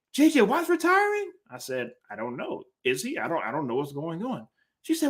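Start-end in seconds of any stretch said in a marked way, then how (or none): 0.1-1.3 very high, teasing, riling voice. Speaker retelling how his wife broke the news to him, mocking imitation of his wife. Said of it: "I just make that voice because I make her mad".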